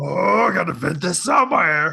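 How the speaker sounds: put-on angry little alien sage voice. Retelling own frustration at real life: angry Yoda voice. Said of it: "we got the angry Yoda now going here".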